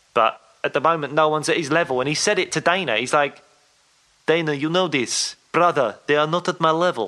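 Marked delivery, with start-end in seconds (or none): 4.3-7.1 put-on failed Russian accent drifting into a Welsh sound. Retelling what he said to Dana, in a bad Khabib impression that sounds Welsh. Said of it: "is he Welsh?".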